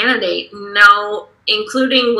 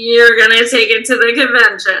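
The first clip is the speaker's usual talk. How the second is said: ordinary talk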